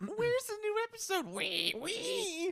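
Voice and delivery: squealing little piggy voice, shrill and very high. Joking about a pig asking for more, in a squealing pig voice. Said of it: "the pig just squeals".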